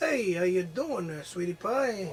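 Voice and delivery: put-on smooth-talking hustler voice. Playing the cast hustler in a role-play scene, greeting another player: smooth-talking Joe Buck. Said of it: "you are a smooth talker".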